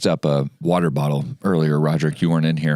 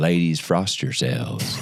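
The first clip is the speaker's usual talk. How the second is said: every word dragged, s's slurred and mushy. Imitating Matthew McConaughey for the group, slurring his S's: imitating Matthew McConaughey. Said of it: "So he's always saying".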